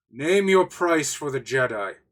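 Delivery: loud booming call. Voicing a character named Cheeto calling out an offer: bellowing. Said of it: "you hear sort of Cheeto bellow".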